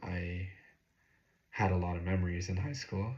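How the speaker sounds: voice catching and breaking partway through. Speaker looking back on high school memories, voice cracking. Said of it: "Voice crack".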